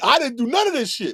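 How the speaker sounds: acted, high, shrieking, screamed-out yell. Acting out an accused woman screaming her denial: imitating someone screaming. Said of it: "I should hear her screaming from here".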